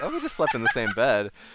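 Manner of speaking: put-on casual, offhand, matter-of-fact, loud, breezy nonchalance. Retelling own answer to a father's question: imitating own nonchalant tone. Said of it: "I was saying that so nonchalantly".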